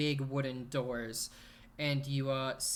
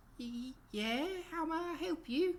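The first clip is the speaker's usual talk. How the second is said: put-on shy girl voice, very high and slow. Voicing a timid girl who opens the door to the players: timid young woman's voice. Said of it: "you see this timid, about twenty-year-old girl".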